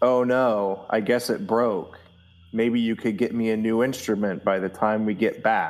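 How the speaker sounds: expressionless deadpan, flat and level. Voicing a character who breaks a borrowed instrument on the way out: deadpan. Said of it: "he deadpan looks at Snick and says".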